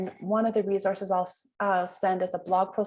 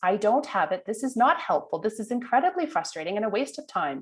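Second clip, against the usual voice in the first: normal talking voice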